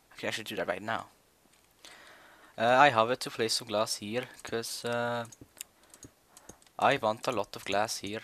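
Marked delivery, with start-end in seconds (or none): 2.6-8.2 put-on Norwegian accent, louder and slower. Speaker tries acting like someone else in a norwegian english accent. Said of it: "make like a Norwegian English accent".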